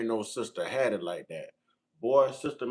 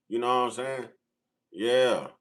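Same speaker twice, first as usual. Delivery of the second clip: normal talking voice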